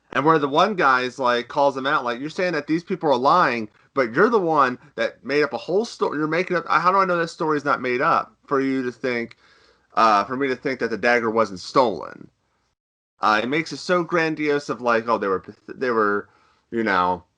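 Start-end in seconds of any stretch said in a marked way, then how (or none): none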